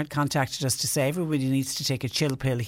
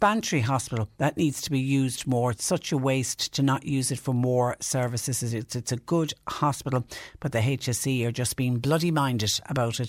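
ordinary delivery

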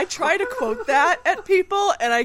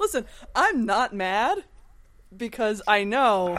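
talking while laughing through the words; 2 semitones lower than usual. A podcast host answers her co-host's teasing, laughing while talking. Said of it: "Are you laughing, actually?".

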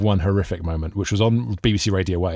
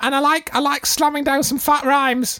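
squeaky voice pitched way up. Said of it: "I did, like, a really high squeaky voice".

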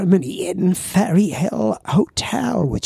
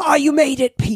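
loud, high, raised voice, acted out; 7 semitones higher than usual. Retelling how someone greeted him as he arrived late, retelling a loud greeting. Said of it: "in a loud voice".

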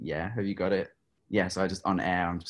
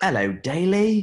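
put-on very high, very loud, shrill, odd British accent; 13 semitones higher, 10 dB louder than usual. Retelling a live on-air call from a stranger, in a weird British accent. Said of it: "this weird, like, British accent is like".

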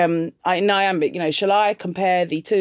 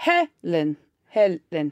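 put-on Nigerian accent, swooping pitch, stress on first syllable. Imitating how a friend's Nigerian father says her name, in a Nigerian accent. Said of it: "her father is Nigerian, so he'd say".

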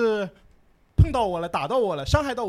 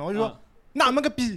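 mock-forceful delivery, slower. Retelling a reply to someone who had already cursed, retelling a forceful retort. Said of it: "我就气势要厚重一点了".

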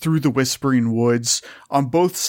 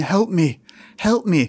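muffled, bubbling, gurgling voice as if underwater; 3 semitones higher than usual. Telling Johnny what he hears, voicing a woman: screaming as if underwater. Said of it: "sounds like she's underwater".

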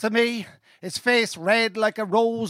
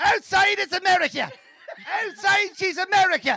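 put-on Cavan Irish accent, pitched up; 9 semitones higher than usual. Retelling how a man delivered a cover's line in a Cavan accent. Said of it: "he went like this in the Cavan accent".

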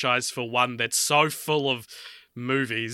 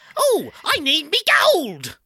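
very high, swooping put-on movie character voice; 6 dB louder than usual. Asked to do the voice of a movie character, a put-on character voice. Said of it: "he talks like this".

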